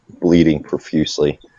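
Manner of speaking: ordinary delivery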